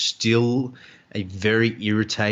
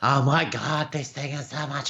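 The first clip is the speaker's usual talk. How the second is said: mock-excited gushing, pitched much higher; 4 semitones higher than usual. Telling listeners how a fellow player reacted during PvP, acting out his gushing. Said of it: "legitimately gushing over it".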